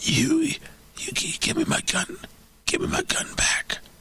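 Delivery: breathy, halting, stumbling whisper, drawn out. Imagining Hunter's reply about the gun: imitating Hunter Biden on drugs. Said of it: "I'm assuming with all the drugs".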